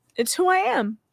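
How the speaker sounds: put-on high, whiny, martyr-like voice. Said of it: "let me do a quick impression".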